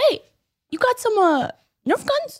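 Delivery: put-on child's New York accent. Retelling how Wes looked up at Keith, imitating Wes's New York accent. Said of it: "he's got like a little New York accent".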